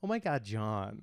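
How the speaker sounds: soft, campy put-on camp voice.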